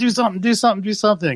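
fast, high, pushy, insistent repeated yelling. Speaker retells how another person kept yelling at them, retelling a yell. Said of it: "Tom was just yelling at me".

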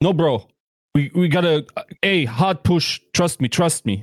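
put-on spoken with a German accent.

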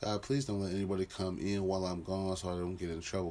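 plain

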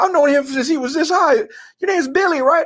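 put-on strong Cajun accent, laid on heavy, very high pitch. Retelling how the coach answered another coach about your name, in Coach O's strong Cajun accent. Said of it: "he's got that strong Cajun accent".

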